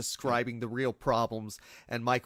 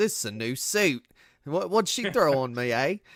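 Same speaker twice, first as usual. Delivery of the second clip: loud, bad fake American accent, half Australian; 4 semitones higher, 6 dB louder than usual. Describing a film scene where a woman throws oil on him, as Michael Caine faking American accent. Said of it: "my Michael Caine doing an American accent impression".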